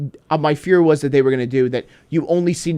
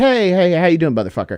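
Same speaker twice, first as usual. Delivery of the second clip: put-on sweetly courteous, very polite, friendly tone; 4 semitones higher than usual. Retelling prank videos of people approaching store workers: imitating a very polite greeting. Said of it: "they say very politely".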